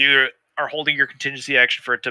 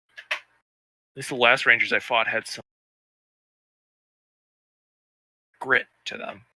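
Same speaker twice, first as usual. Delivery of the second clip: unimpressed, disappointed, let-down tone; 3 semitones lower, 4 dB quieter than usual. Voicing a nicked foe who looks up at the player: disappointed. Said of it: "Like, disappointed".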